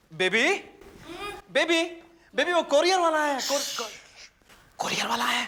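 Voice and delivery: loud, eager, high-pitched excited shout. In a scene, a character calls out to the others, shouting. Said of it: "इतनी जोर से चिल्ला क्यों रहा है".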